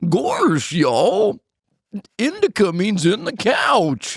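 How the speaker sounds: deliberately bad cartoon voice, very slow, high, swooping. Showing the others an awful impression of Goofy. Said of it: "this is my impression of Goofy if he was fucking awful".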